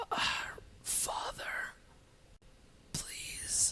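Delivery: very quiet, hushed, rasping, pleading whisper. Voicing a dying figure with no eyelids begging: rasping voice. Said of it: "he just rasps".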